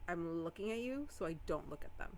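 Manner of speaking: ordinary delivery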